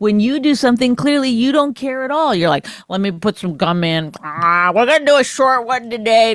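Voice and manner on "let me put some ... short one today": mocking, doltish dumb-guy voice. Imitating the other speaker's lazy podcast attitude: dumb guy voice. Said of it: "Another voice?".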